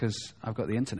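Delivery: low, soft murmuring.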